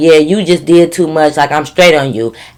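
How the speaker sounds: ordinary delivery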